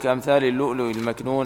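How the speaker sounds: usual speaking voice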